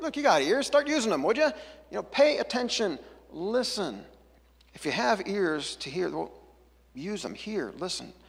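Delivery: mock snide sarcasm. Retelling a saying of Jesus, imagining it sarcastic or rude: imitating Jesus sounding sarcastic. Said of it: "sarcastic or rude or something".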